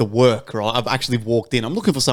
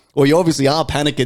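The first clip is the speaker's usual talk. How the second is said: ordinary delivery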